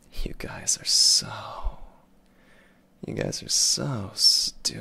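whispered, slow, breathy handsome heartthrob voice. Answering a viewer's request to call chat stupid: Ikemen voice. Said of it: "tell chat that you're stupid in the most Ikemen voice".

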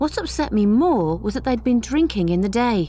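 ordinary talk, nothing marked

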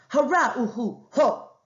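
sharp-toned, king-like exclamation. Reading a story aloud, the king exclaims in a sharp voice. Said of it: "His voice was sharp".

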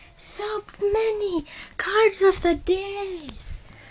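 very high, slow, silly sing-song marveling voice.

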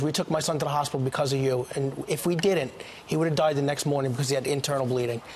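normal talking voice

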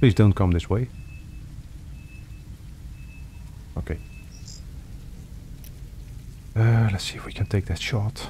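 hushed whisper, under the breath. Gamer hiding from a drone during a stream, whispering. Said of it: "I really don't know why I'm whispering".

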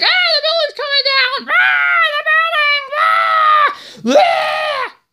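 mock very high, scared, panicked shrieking screams. Retelling how everyone reacted on 9/11; mock-scared screaming. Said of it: "Everyone was scared".

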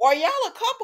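high, incredulous tone of disbelief.

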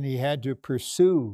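emphasis on the word "pursue". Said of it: "Again, I emphasize the word pursue".

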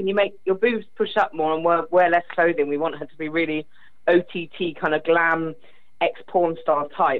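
ordinary talk

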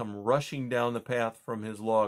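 plain reading voice

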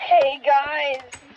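said angrily. A gamer greets viewers at the start of a video, angry greeting. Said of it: "You said that so angrily".

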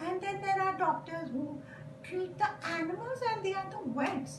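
high-pitched little puppet helper voice. A puppet used to explain things, speaking in a puppet voice. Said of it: "A puppet is used to explain".

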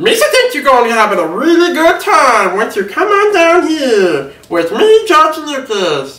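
very high, squeaky, swooping, goofy alien voice. Speaker offers a listener an impression and performs it: Jar Jar Binks impression. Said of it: "my Jar Jar Binks impression".

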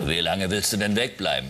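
very low, deep put-on mother voice. Acting out the mother's line in a dialogue, deep put-on mother voice. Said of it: "Also die tiefe Stimme ist die Mutter".

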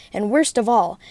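plain

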